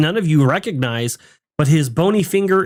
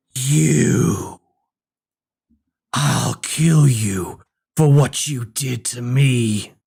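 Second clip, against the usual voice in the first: hoarse, raspy, hollow voice; 3 semitones lower than usual. Game master voicing a voice the players hear from below, raspy, hollow, loud voice. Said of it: "you guys hear a raspy but hollow, but somehow still loud voice say".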